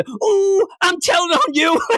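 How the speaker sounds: very high-pitched robot voice. Proposing a tattletale robot that tells on people over the airwaves: tattletale robot voice. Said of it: "the stupid tattletale robot".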